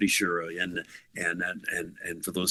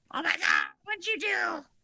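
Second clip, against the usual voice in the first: put-on scream, pitched higher. Retelling how Sharon reacted to the shaved head: imitating Sharon screaming. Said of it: "Sharon, like, screaming".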